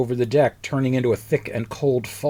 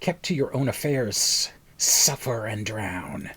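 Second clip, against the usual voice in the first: rasping, sinister, raspy hiss; 3 semitones lower, 4 dB quieter than usual. Reading a story aloud, voicing a speaker in a raspy hissing voice. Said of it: "A raspy voice hisses".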